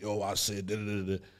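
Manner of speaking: low, level, angry monotone drone. Showing how not to give a partner correction, angry monotone voice. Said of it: "in an angry, monotone voice like".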